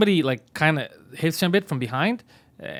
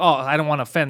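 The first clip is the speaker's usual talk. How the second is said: normal talking voice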